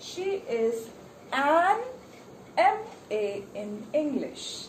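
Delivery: heavy emphasis placed on the word "an". Teaching children when to use an before a vowel sound, stress on an. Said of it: "I am putting more stress on the ands".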